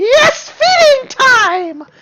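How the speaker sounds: very high, loud, squeaky cartoon voice, stretched out. A voice calls out on the stairs as players try to stay silent, Mickey Mouse voice. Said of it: "it's Mickey Mouse".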